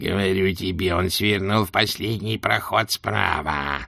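hissing voice, grating like iron on stone. Narrator reading a character's line to a companion in a story, hissing, grating voice. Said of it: "прошипел Кринг, голосом похожим на скрежет железа о камень".

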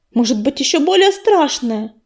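agitated, worked-up, anxious. A narrator reads a she-cat adding to a companion's words: agitated. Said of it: "взволнованно добавила Ласточка".

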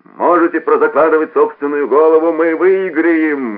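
loud, high-pitched shouting. After his companion yells his team's name, a man shouts back. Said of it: "крикнул ему в ответ Кронер".

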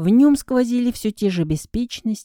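ordinary delivery

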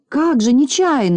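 acid, scoffing sarcasm. Znayka answers the others in a story scene: sarcastic smirk. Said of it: "язвительно усмехнулся Знайка".

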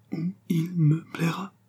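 high, each word beaten out syllable by syllable. A groom repeats back the words his employer just said to him: spelling out each syllable. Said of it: "scanda le groom qui craignait de comprendre".

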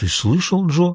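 astonished, wondering. The little one speaks to Joe after Cliff says he'll do it himself, surprised. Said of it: "удивился малыш".

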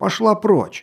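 high, angry, dismissive shout. A duke answers a woman's demand from the bed, angry shout. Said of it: "сердито крикнул он".

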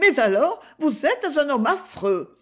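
high-pitched, exclaiming cry. A woman at last speaks out to a man, exclaiming. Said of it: "s'écria-t-elle enfin".

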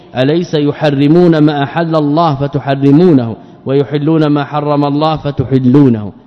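ordinary delivery

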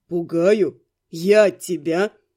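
very deep, low, scoffing, mocking tone. Reading a story, the young man answers her plea to stop scaring her: mockingly asking. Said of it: "насмешливо полюбопытствовал".

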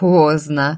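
mocking, derisive tone. The husband replies to his wife's change of mind, mockingly. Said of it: "насмешливо отозвался он".

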